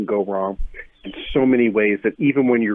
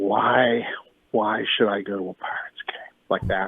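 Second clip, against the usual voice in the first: play-acted heavy, soft voice laden with sighs; 5 dB quieter than usual. Retelling a question people often ask them: imitating a heavy, sighing voice. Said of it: "asked in a heavy voice with a lot of sighing".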